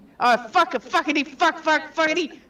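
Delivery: frustrated, exasperated, angry delivery. Reacting to a monster in a game turn: frustrated angry swearing. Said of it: "I'm so mad".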